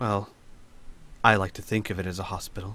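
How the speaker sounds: sorry-sounding voice. In a roleplay game, answering a wounded character's question, apologetic. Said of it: "shrug apologetically and say".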